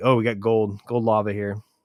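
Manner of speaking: mock angry, mad, griping tone. Quoting a man who complained to you by message: retelling an angry complaint. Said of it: "he's all mad about it".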